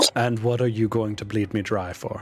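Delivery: very flat, monotone, deadpan dragon voice. The dragon turns to Astrid and replies, very flat tone. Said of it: "just says in a very flat tone".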